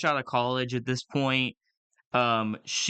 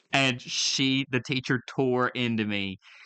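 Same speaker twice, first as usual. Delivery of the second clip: ordinary talk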